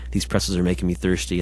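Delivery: ordinary delivery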